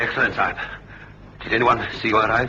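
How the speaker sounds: breathless, winded, out of breath on every word. Greeting the men who brought the kid safely: out of breath. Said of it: "you sound out of breath".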